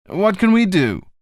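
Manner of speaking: ordinary delivery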